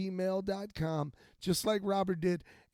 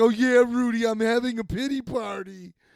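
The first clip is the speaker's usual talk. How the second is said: put-on very loud, blaring girl's voice; 4 semitones higher, 10 dB louder than usual. Retelling how a girl answered when told to stop: imitating her. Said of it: "And she'd be like".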